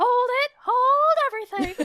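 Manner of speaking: very high-pitched, slow animated-movie character voice. Quoting a Lilo and Stitch line to express a feeling: Pleakley voice. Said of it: "when Pleakley's like".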